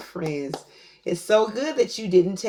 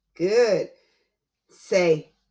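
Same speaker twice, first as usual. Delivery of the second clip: normal talking voice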